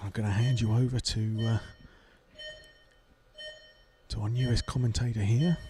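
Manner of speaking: hushed, low voice. Race commentator handing over to the newest commentator while the rostrum is silent, talking quietly. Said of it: "I'm talking quietly".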